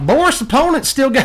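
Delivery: high, put-on Southern drawl. Doing a playful voice while narrating a card game, naming an opponent in a southern accent. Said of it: "I like saying Boris in a southern accent".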